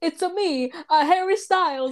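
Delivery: put-on Italian accent. Retelling how Alan opened the door as the distraction, Italian accent. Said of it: "In an Italian accent".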